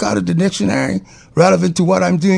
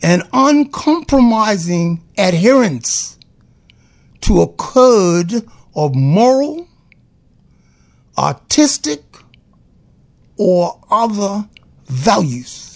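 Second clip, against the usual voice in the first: slow, careful, deliberate dictionary-definition style reading. Reading a word's definition aloud a second time, reading slowly. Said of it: "I need to read that slowly again".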